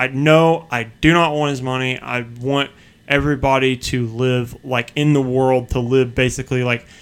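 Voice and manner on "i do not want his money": mock-sharp curt tone, slower. Speaker retells answering her question the third time, retelling saying it sharply. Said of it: "I kind of said it sharply".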